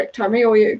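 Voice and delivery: normal talking voice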